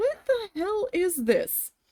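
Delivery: very high, swooping, upset outcry. Retelling own outburst at work after being sent home: retelling own upset outburst. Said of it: "I was so upset".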